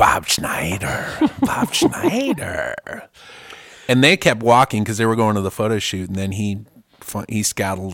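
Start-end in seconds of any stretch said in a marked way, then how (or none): 0.0-3.1 threatening, low, very slow, words dragged out. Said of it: "saying Bob Schneider menacingly like that".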